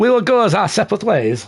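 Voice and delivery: put-on failed French accent. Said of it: "I can't do a French accent".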